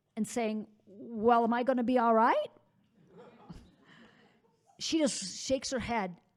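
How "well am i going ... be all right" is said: plain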